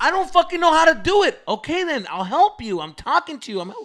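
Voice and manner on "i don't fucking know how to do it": loud, very high-pitched outburst. Retelling someone walking them through centering something: retelling own loud outburst. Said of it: "Why are you getting loud?".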